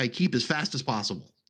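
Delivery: ordinary talk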